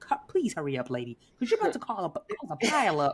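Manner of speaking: acted exasperated, impatient urging tone. Retelling a car crash, imitating own past urging of a slow lady: retelling own impatient plea. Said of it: "I'm like".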